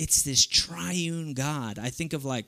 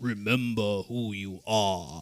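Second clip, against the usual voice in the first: deep, low, slow, unhurried voice; 6 semitones lower than usual. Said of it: "speaking like Mufasa did to Simba".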